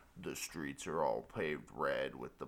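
deep, low, slow, soft voice.

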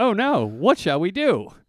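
slow, earnest, supportive and very concerned tone. Reading out own earlier text message: imitating own concerned reply. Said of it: "Very concerned, very supportive".

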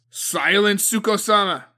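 booming voice. A man silences a comrade's accusations, thundering. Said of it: "Agatoki thundered".

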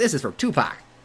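tiny, small, high-pitched put-on voice. Quoting the best line in a movie, little high-pitched voice. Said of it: "it's like his little like high pitched voice".

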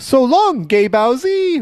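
taunting voice, very high pitched and very slow. Quoting Mario's line from the game: Mario voice.

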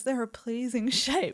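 soft, really suspicious, insinuating tone. A speaker recounts what another person said: retelling in a suspicious voice. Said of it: "in a really suspicious voice".

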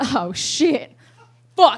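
flustered, startled, nervous, panicked outburst. Retelling her reaction on seeing the redhead, imitating her own nervous reaction. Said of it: "I get real nervous all of a sudden".

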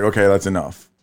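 normal talking voice

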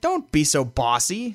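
sharp snap, slow, drawn-out and deliberate. Retelling a movie scene, snapping like the Joker. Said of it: "And Joker just snaps".

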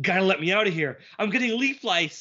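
play-acted frantic, nerdy, high-pitched, rushed panic. Imagining Bushroot pleading to be let out of the cell: panicked Bushroot voice. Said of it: "he'd be more panicked".

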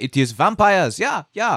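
high-pitched mock Eastern European accent. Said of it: "Super racist accent".

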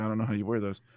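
normal talking voice

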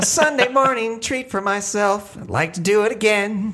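very high-pitched little frog puppet voice. Joking about a coffee treat, in Robin the Frog voice. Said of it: "you're doing Robin's voice".

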